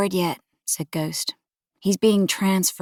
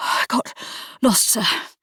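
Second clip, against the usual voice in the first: spluttering, out of breath, much higher pitch; 4 semitones higher than usual. Narrating, a late new recruit bursts in out of breath, spluttering. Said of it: "he spluttered".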